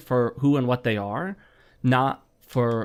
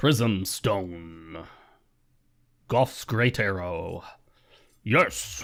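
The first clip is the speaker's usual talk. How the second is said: goofy, low, silly put-on voice, one word stretched out; 6 semitones lower, 3 dB quieter than usual. After thanking a donor, naming items in a silly put-on voice. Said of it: "I don't know why I'm doing that voice".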